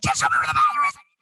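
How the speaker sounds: very high, frantic, desperate tone.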